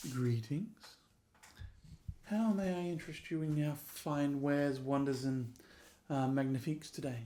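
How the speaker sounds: put-on unhurried, slow young lady voice. Voicing a young lady who greets customers among magical wares: young lady character voice. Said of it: "there's this young lady walks forward and goes".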